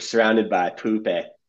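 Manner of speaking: put-on spoken in Manchester accent. Recalling how he delivered the line on the first take, use the Jamie Tartt Manchester accent. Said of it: "he gave it that Jamie Tartt Manchester accent".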